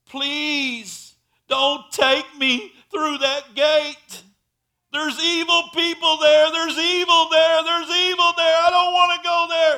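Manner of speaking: shrill, very high, very loud, desperate screaming cry. Preaching, the speaker retells a dying woman's last words, retelling a desperate plea. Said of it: "She was crying out".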